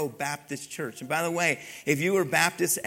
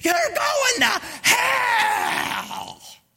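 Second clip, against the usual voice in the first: very high, loud, very slow drawn-out scream; 7 dB louder than usual. Retelling a man holding up a Bible verse screaming at the speaker, retelling a scream. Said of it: "one guy's screaming at me".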